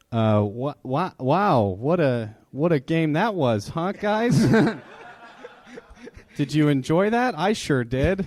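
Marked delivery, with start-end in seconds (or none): 1.2-8.2 high, slow, pandering voice, faking interest, sounding clueless. Pandering to gamers when asked what to say: like a mom who doesn't get games. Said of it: "You sound like a mom trying to understand her kids".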